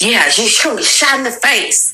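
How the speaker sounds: put-on angry old person voice. Retelling what an older guy said to them: imitating an angry old person. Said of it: "sound like an angry ass old person".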